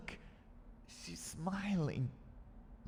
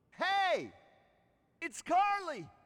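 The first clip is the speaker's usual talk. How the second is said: yelling, pitched very high; 11 semitones higher, 6 dB louder than usual. Finding people in the office, calling to a woman right beside her, yelling. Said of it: "Why are you yelling at her?".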